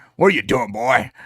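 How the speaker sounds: rugged, rowdy, rough-and-tumble cowboy voice. Retelling a scene where a dog talks to Dean, in a rough-and-tumble cowboy voice. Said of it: "sounds like a rough and tumble cowboy".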